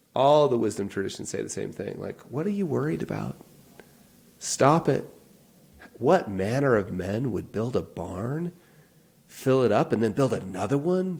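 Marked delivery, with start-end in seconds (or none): 2.3-11.2 mock, dripping sarcasm with swooping delivery. Quoting Jesus on worrying about money: imitating Jesus dripping with sarcasm. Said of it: "dripping with sarcasm".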